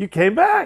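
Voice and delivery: mock astonished, high, loud surprised exclamation. Retelling the supervisor's greeting on the speaker's second day at work, imitating a surprised supervisor. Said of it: "said with a surprised voice".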